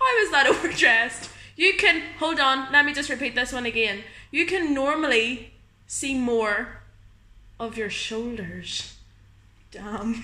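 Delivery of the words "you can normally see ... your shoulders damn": creepy, eerie put-on read-aloud voice. Reading out a message someone sent, in a creepy voice. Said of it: "the creepy voice when you read it out".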